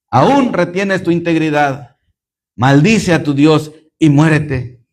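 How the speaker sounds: ordinary talk, nothing marked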